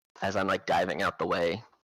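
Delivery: ordinary talk, nothing marked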